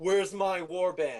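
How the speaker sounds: all-out, full-throated screaming. Voicing a character who screams across the bar for his warband: screaming. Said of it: "screams in the bar".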